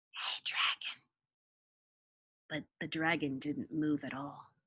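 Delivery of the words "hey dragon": hushed, gentle, very soft whisper. Narrator reading a character speaking to a sleeping dragon, very soft whisper. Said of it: "Elizabeth whispered very softly".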